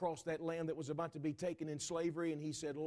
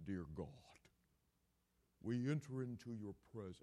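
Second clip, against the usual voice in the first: low, put-on, flowery, pious churchy prayer voice; 6 semitones lower, 5 dB quieter than usual. A speaker mocks how people change their voice to pray, in a put-on churchy prayer voice. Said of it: "like they got a steeple stuck in their throat".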